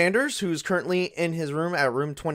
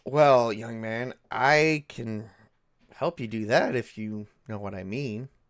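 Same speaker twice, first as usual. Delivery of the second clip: flirtatious, seductive woman voice, lower; 5 semitones lower than usual. Voicing a seductive woman greeting Rocky late at night: seductive woman voice. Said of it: "She's like".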